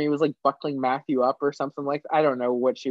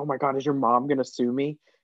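alarmed, worried, frantic, panicked blurt. Retelling a night at the cabin, imitating Anne-Marie panicking. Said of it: "Anne-Marie started, like, panicking".

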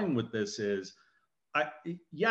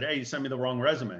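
ordinary delivery

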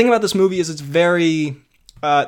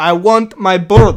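loud, very slow, drawn-out, expressive delivery; 2 semitones higher, 8 dB louder than usual. Correcting how another speaker quoted him, imitating him, not deadpan. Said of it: "He's more like".

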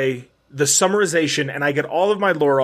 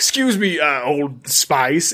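slow, drawn-out put-on British accent. Retelling a Futurama line from when Bender joins the mob: Bender's British accent. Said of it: "he has the British accent".

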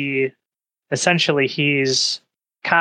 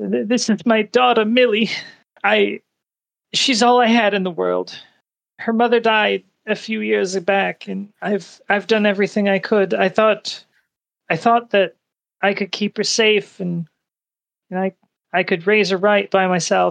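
distressed sobbing, much higher pitch; 6 semitones higher than usual. An older gentleman in distress turns to the listener about his daughter, ugly crying. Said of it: "He's pretty much ugly crying".

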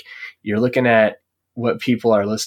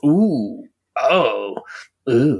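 cartoon character voice making ooh sounds; 3 semitones higher than usual. Describing a card seller's reaction: imitating Velma. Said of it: "they hit you with that Velma face".

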